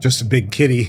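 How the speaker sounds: words growled out. Greeting Artbert, the big kitty they have missed, growling.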